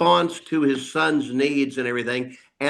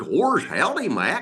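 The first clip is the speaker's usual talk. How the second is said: acted cartoon dog character voice; 4 semitones higher than usual. Recalling recording sessions, the speaker demonstrates the line in Goofy voice. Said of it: "let's try using Bill's voice instead of Goofy's voice".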